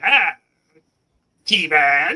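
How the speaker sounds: swooping, swinging cartoon villain voice. Recalling the old cartoon with another speaker: Skeletor voice. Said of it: "Masters Universe Skeletor, like".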